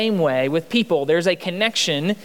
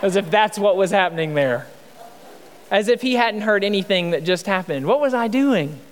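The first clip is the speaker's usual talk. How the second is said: ordinary delivery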